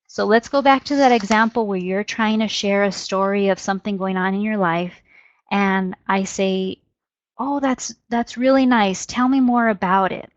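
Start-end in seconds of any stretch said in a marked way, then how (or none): 7.4-10.1 engaged, interested, encouraging, inviting tone. Demonstrating tone matching words, respond to someone sharing a story with an interested tone. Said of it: "my tone of voice, they're both sending that same message".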